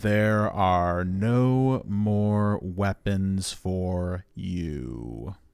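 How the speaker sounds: very slow, deliberate, drawn-out, word-by-word delivery. Addressing an organic lifeform after promising to speak slowly: very slow delivery. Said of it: "Let me say this very slowly".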